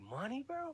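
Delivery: high, soft, incredulous disbelief.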